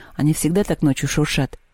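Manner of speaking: plain reading voice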